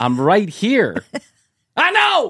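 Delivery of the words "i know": slow, stretched-out, swooping, drawn-out mild yelling. Mocking people on the show who always yell: imitating someone yelling. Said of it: "Why are you yelling?".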